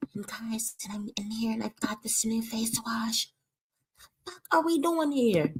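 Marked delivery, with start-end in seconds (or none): 0.2-3.3 mocking, hushed whisper poking fun. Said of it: "She acting like Chrissy".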